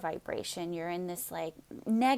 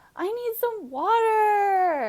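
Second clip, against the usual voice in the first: play-acted, very high, drawn-out, annoying whine; 12 semitones higher, 5 dB louder than usual. Acting out someone whining a request, imitating a whiny, annoying tone. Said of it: "like this really annoying tone".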